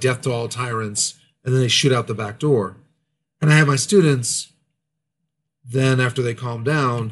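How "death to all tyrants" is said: usual speaking voice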